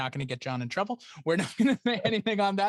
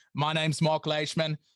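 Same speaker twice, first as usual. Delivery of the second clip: goofy, silly put-on Australian accent. Recalling a bit where he introduces himself, silly put-on Australian accent. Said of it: "I would do a silly little like Australian accent".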